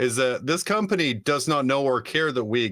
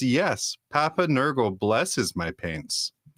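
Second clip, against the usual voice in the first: slow, drawn-out, creepy, spooky put-on voice. Retelling a man's reply when asked if he makes his own paints, put-on creepy voice. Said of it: "he puts on a creepy voice and says".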